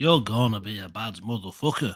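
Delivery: put-on rough, gnarly old Liverpool Scouse accent. Repeating the line their dad said on their first school day, in a gnarly old Scouse accent. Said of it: "could you do this in a gnarly old Scouse accent".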